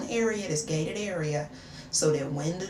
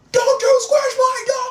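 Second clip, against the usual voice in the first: furious yell, very high and very loud; 13 dB louder than usual. Retelling the dog owner's reaction after nearly squishing his dog, imitating an angry yell. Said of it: "he starts yelling at me".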